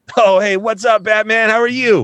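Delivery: loud, very high, gushing, super-friendly voice. Describing a planned character, acting out his greeting to batman in a mock super-nice guy voice. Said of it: "He's just like super. nice".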